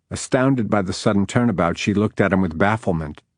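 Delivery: ordinary delivery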